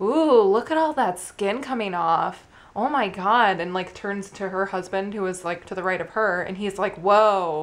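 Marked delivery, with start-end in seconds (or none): 0.0-3.6 loud, drawn-out, exclaiming voice. Speaker retells a woman remarking on her feet during a pedicure, retelling a loud remark. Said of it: "said loudly enough for me to hear".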